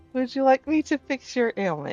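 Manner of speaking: nice, sweet, high angelic voice. Game master voicing a female character speaking to a player: nice, sweet, angelic voice. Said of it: "She says in a nice, sweet, angelic voice".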